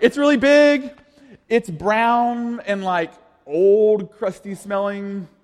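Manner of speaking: silly, high, tiny ant voice, very slow. Voicing what the ant would say, bad ant voice. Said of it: "That's really bad It's my aunt voice".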